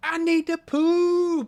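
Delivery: mock, very high, very slow, drawn-out wailing child's scream. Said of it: "just screaming".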